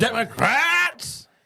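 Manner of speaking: high, slow, drawn-out mock yell.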